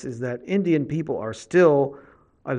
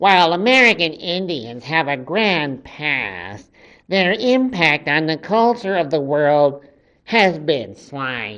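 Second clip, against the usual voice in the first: whiny voice, word "past" drawn out. Reading a quoted passage aloud in Andy Rooney's weird, whiny, irritating voice. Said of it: "with Andy Rooney's weird, whiny, irritating voice".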